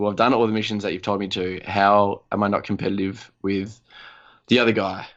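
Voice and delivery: ordinary talk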